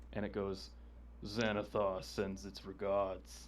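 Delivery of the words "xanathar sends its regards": very deep, slow, drawn-out monster voice. A crow-like creature speaks up to deliver a message: very deep voice. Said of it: "you hear this very deep voice come out of it".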